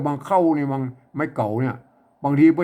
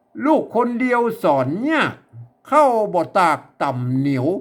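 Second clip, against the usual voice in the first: northern Thai accent, pitched higher; 4 semitones higher than usual. Reading a written line aloud to show the accent: Chiang Mai accent. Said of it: "จะอ่านแบบสำเนียงเชียงใหม่".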